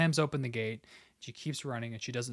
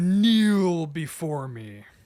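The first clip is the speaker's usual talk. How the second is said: thunderous, very loud booming voice, pitched up; 5 semitones higher, 11 dB louder than usual. A player acts out their character's voice coming from the smoke; huge booming voice. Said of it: "this huge, booming voice of".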